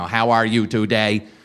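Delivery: silly, dumb mechanical robot voice. Retelling how he greeted people as a robot, in a stupid robot voice. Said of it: "that was my robot voice".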